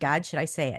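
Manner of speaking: usual speaking voice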